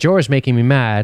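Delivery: ordinary talk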